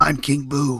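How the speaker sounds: bad put-on ghostly voice, gravelly and deep. Imagining Michael Keaton cast as King Boo, do a really bad Michael Keaton Batman as King Boo. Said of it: "that's my really bad Michael Keaton doing Batman as King Boo".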